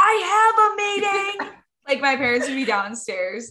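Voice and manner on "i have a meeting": very high, drawn-out scream. Retelling how she announced to the whole house, re-enacting screaming. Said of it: "I'm like screaming in the whole house".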